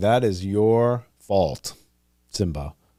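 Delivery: slow, icy, expressionless cold deadpan.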